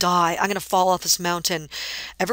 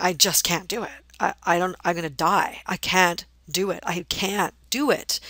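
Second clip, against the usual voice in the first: put-on crying, tearful pleading between sobs. Retelling breaking down halfway up a mountain: retelling crying plea. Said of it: "just bursting out crying and saying".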